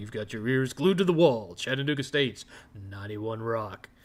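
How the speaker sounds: low, on-air radio station announcer voice. A former college radio DJ showing the voice he learned there, radio DJ voice. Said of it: "D J voice came from".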